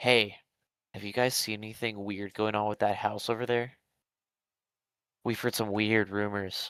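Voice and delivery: low, hushed, confiding half-whisper. Retelling how a man sat on the sidewalk and leaned in close to ask neighbors, half-whispering. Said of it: "and he whispers".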